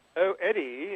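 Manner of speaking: put-on light English accent. Retelling what the studio manager said to him: lovely little english voice. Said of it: "in her lovely little English voice".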